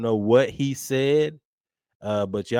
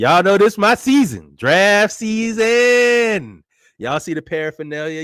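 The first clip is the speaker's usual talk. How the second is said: jovial, joyful, loud, sing-song, "season" stretched out; 8 semitones higher, 8 dB louder than usual. Host opening the show's football segment during draft season, in a jovial, joyful voice. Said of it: "you hear the jovialness in my voice".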